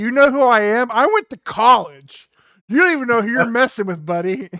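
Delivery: booming, very loud, high-pitched shouted tirade. Recounting a movie scene where he yells at a rat: imitating Peter Weller yelling. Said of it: "he's like yelling at this rat".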